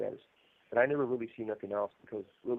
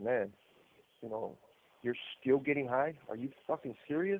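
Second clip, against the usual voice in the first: put-on voice full of caught-off-guard surprise; 3 semitones higher than usual. Retelling how she reacted to his news: imitating someone's surprise. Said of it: "the surprise in her, in her, uh, in her voice".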